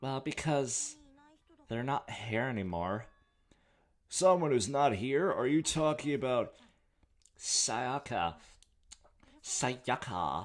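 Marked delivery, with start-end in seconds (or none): 9.4-10.5 put-on Valley Girl voice, lower. Saying a name from the dialogue in a Valley Girl accent. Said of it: "in a Valley Girl accent".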